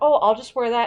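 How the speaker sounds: ordinary delivery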